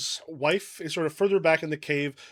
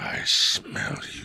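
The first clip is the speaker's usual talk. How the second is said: gravelly, rough dragon creature voice. Playing the dragon for the group, gravelly dragon voice. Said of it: "dragon voice is not getting picked up by the mic. It's too gravelly".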